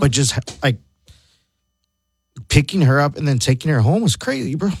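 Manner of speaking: teary, choked-up voice, fighting back tears. Remembering picking her up from high school, tearing up. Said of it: "like I'm tearing up right now".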